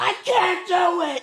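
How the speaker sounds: acted, very high, very slow, drawn-out screaming cry. Retelling a phone call, speaker acts out the son in the background; imitating Caden screaming. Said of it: "like screaming".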